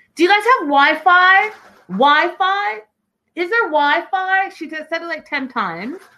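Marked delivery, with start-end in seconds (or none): 0.2-4.5 mock pushy, obnoxious, high screaming. Telling listeners how a woman on her phone screamed in a restaurant, imitating her screaming. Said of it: "and she screams".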